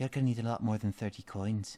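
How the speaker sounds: put-on Scottish-Irish accent. Voicing a game NPC, the speaker in a Scottish or Irish accent. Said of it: "I'm turning her Scottish or Irish".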